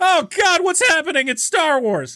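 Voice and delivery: very high, alarmed, panicked narrator voice. Showing the other, drastically shifted voiceover voice: panicked voiceover voice. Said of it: "when there's a very drastic shift".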